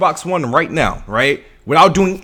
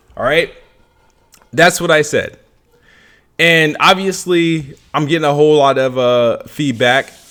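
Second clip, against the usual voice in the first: plain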